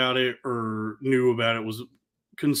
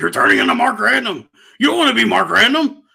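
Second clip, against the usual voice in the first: put-on scream, higher and louder; 10 semitones higher, 10 dB louder than usual. Retelling a call during a meltdown: imitating someone screaming. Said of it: "he started screaming at me like".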